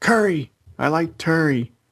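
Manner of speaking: put-on high, yelled outburst, like a child blurting. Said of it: "Shirai just yells".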